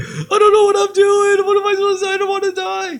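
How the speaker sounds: put-on, very high, tearful, weeping teenager voice. Acting out a teenage pilot in the cockpit: imitating a crying teenager.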